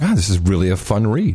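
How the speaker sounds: ordinary talk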